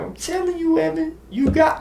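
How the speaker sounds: very high, squeaky, funny voice.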